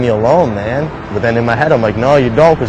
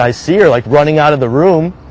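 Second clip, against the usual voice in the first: ordinary talk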